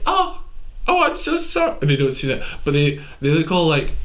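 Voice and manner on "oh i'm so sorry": very high, drawn-out, startled, surprised tone. Retelling asking talkers in the quiet section to stop, imitating their surprised apology. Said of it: "And they're all surprised".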